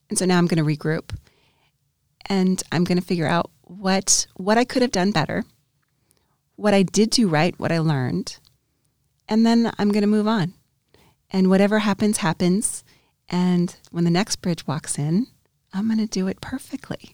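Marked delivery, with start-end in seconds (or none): 15.7-17.1 soft, a little facetious whisper with a wink. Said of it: "I say that a little facetiously".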